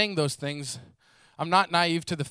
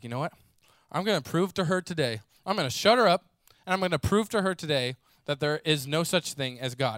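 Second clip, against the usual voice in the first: plain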